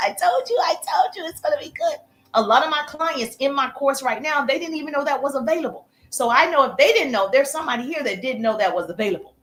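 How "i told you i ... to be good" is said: gushing, effusively grateful tone.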